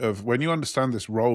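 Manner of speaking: usual speaking voice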